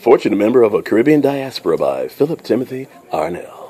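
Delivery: deep signature announcer delivery. An author on a show says his book title and name, in his signature deep voice. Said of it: "let me say it in my voice".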